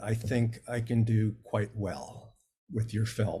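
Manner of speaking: ordinary talk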